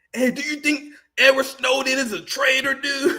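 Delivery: high surfer-bro dude voice. Making fun of people who talk weird, mocking a weird way of talking. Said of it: "Why you talk like that?".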